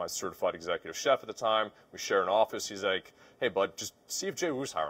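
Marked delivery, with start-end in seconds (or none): none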